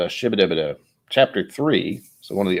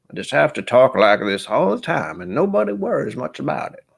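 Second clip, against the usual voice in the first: put-on high-pitched old southern gentleman character voice; 7 semitones higher than usual. Describing a character voice in their head, doing the KFC Colonel voice. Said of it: "this old southern old southern gentleman".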